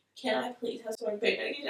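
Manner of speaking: whispered voice. Retelling asking the nurse for pain medication: imitating her own past whisper. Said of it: "trying to whisper".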